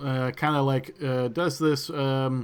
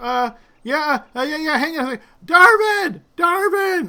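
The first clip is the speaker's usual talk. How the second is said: yelling, higher and louder; 9 dB louder than usual. Voicing a logger calling to someone far off: shouting a name. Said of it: "he starts shouting this to the east".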